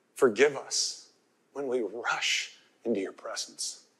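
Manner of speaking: gentle, quiet, hushed prayerful voice. Retelling what a man bowed in prayer said, in a soft voice. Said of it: "with a soft voice".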